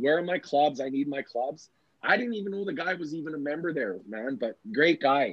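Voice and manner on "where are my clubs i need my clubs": usual speaking voice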